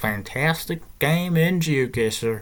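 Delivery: put-on, fake Texas accent. Starting a GeoGuessr game, the speaker talks in a put-on Texan accent. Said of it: "I just was pretending to be from Texas".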